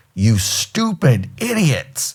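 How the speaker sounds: put-on angry telling-off. Retelling how his master chief ran up and yelled at them: retelling an angry yell. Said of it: "we got yelled at".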